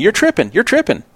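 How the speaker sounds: dismissive, nasty, flippant throwaway tone, high. Retelling a player's dismissive reply: imitating Andrew, flippant and nasty. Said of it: "Very, very flippant and nasty about it".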